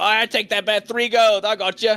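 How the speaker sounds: very high, loud nobleman-gambler character voice. Voicing a gambler in fine clothes who takes a bet. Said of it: "what looks like gambler wearing fine nobleman's clothes go".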